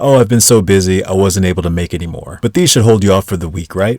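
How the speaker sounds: normal talking voice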